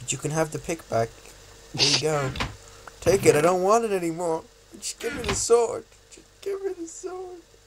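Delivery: high, tearful, begging tone, close to tears. Player begs another player to trade back the sword for the pick, tearful pleading. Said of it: "I'm genuinely tearing up here".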